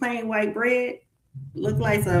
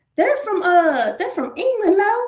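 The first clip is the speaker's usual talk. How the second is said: put-on high-pitched Southern accent; 8 semitones higher, 4 dB louder than usual. Retelling a mother's words about new friends: imitating mom's southern accent. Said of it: "she is so Southern".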